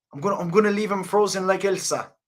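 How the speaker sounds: high, tentative fighter voice. Trying again after asking how he talks, doing an Israel Adesanya impression. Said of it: "I don't know if I can do Izzy".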